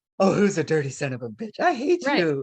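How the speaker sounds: sweet, cooing, sing-song praising voice. Showing the tone of voice for reinforcing a puppy: sweet puppy-praising tone. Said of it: "if you're trying to reinforce the puppy".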